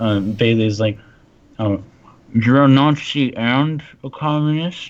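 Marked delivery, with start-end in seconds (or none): 1.6-4.9 talking with mouth half full, higher. Voicing a character asking a question over dinner: mouth half full. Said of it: "with a mouth half, half full".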